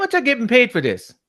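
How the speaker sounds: put-on very high, very loud, shrill squealing child voice. Asking how much they are getting paid: Will Smith's kids impression. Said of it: "that was my Will Smith's Kids impression".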